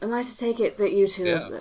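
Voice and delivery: very patronizing, condescending tone. In character, asking two companions about their money: very patronizing tone. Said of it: "She says in a very patronizing tone".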